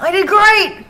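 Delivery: indignant protest, high, loud whining.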